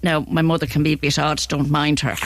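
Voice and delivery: ordinary talk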